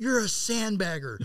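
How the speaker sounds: put-on high yelling. Retelling what the other driver yelled after the final round: imitating someone yelling. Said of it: "he's yelling".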